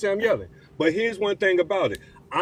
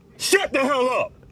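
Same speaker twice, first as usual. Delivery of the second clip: heated, furious, high-pitched angry shout; 6 semitones higher than usual. Arguing with another speaker about the hurricane: angry yelling. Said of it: "I need you to bring your levels down".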